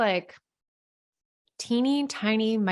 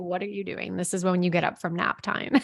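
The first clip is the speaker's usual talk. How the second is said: ordinary delivery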